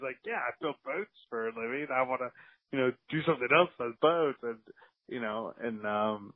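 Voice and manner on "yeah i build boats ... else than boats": put-on little voice with a British accent. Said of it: "in this little British voice that he has".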